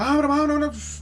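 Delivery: high-pitched, loud, panicked yelping noises.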